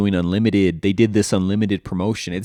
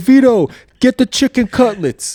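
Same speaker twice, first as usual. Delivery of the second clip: put-on old Italian man voice, high and loud; 8 dB louder than usual. Describing a cooking video, imitate the older Italian man calling to his son. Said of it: "this Italian older dude".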